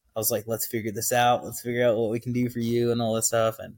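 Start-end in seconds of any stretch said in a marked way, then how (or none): 0.5-3.0 keen, excited, eager voice. Retelling one's own reaction at a crisis call: imitating own excited words.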